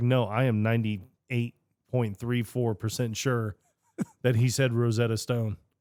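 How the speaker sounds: plain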